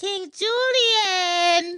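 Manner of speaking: very high squeak, word Julian drawn out. Describing a creator's Instagram videos, quoting his Mort from Madagascar voice. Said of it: "He does uh an impression of Mort".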